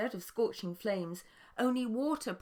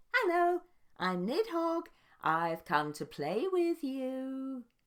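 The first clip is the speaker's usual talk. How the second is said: sneering, giggly high voice, "you" stretched out; 6 semitones higher than usual. A narrator reads a slug-like creature calling out to dragons: sneering giggly Nidhogg voice. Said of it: "a sneering, giggly voice called out".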